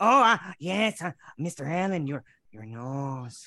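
put-on comic-book villain voice. Voicing the comic villain Bloodwork as Peter Lorre. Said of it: "You like the Peter Lorre Bloodwork?".

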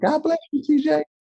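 squeaky, way-up-high, very high-pitched voice. Retelling Troy's reply to his trash talk: high-pitched Troy impression. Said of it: "And he has a high-pitched voice".

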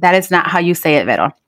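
ordinary talk

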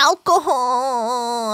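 slow, drawn-out, stretched exclamation. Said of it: "he's like".

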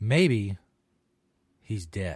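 still hopeful, upbeat note. Speaker tries the same line a second time, in a hopeful tone. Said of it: "That sounded kind of hopeful too".

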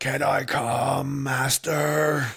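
very slow, high, full yell with stretched "come". Voicing a character calling to his master: yelling as loud as he can. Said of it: "yells as loud as he can".

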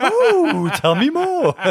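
high, loud, gushing ooh. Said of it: "You could have been like".

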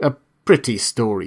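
ordinary delivery, nothing marked

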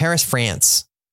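laid-on, over-dramatized, strong American accent. Discussing how americans say paris, in a really american accent. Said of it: "I went really American there".

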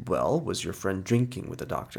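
ordinary talk

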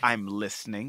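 very low, soft character voice. Recalling a funny scene, speaker quotes a line in a Richard Kind voice. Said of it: "Just in his great Richard Kind voice".

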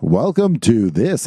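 imitated robot voice. Describing a video's narration: imitating a robot voice. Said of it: "and it's a robot voice".

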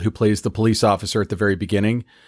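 ordinary talk

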